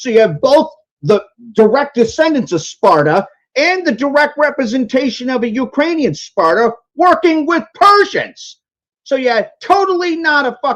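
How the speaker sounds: very high pitch, heated, anger building up. Talking with others in a discussion, getting pissed off. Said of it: "I'm getting pissed off".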